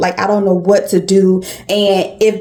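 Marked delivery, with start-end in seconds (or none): none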